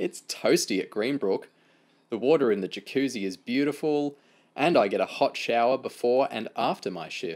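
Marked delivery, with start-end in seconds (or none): none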